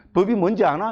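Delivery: cheeky Gyeongsang intonation on 아나. Quoting a friend's question about the law, gyeongsang intonation. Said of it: "이것도 저 경상도 좀 저, 어, 어, 억양인데".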